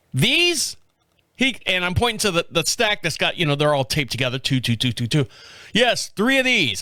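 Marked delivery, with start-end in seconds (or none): 5.7-6.8 put-on voice of a young kid worker. Retelling what the young store worker said about the pack: imitating the young worker. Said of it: "I'm tired of doing the voice".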